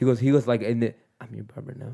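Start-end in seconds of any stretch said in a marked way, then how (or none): 1.2-1.9 very quiet, very soft, close whisper. Retelling what a barber whispered in the ear: imitating someone whispering.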